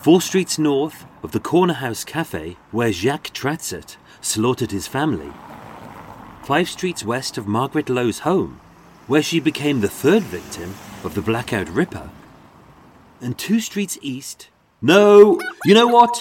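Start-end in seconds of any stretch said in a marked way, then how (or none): 0.0-14.5 mock posh tour-guide voice. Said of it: "me, a brummie, pretending to be posh".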